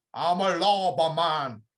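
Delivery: very slow, loud, drawn-out Jamaican drawl. Retelling what a man shouts for his top pick in each category, put-on accent. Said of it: "good accent as well".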